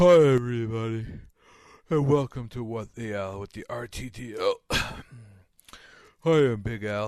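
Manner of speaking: groggy, drowsy, sleepy, just-woken-up voice. Host opening the show right after waking from a nap, sleepy. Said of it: "you feeling a little sleepy today?".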